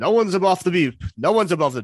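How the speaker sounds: high, loud shouting. Retelling how a driver shouts at a departing officer, retelling a shout. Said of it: "as Larry shouts".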